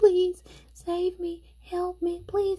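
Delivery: put-on cute, high, slow, pleading little-boy voice.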